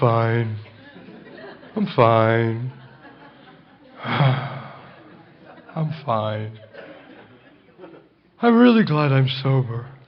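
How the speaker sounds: gloomy, low voice. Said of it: "I like to call him Sheldon the Mope".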